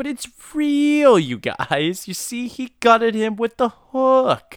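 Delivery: very high, loud, overly sincere, gullible, insistent pleading. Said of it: "He's always a little bit too earnest".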